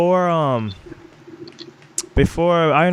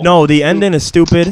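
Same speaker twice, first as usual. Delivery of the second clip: ordinary delivery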